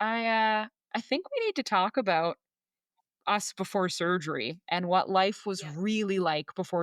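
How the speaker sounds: ordinary talk, nothing marked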